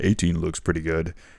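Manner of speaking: put-on flat deadpan delivery. Retelling how a man walked up to the table, stared at everybody: retelling a deadpan remark. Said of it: "stares at everybody deadpan and says".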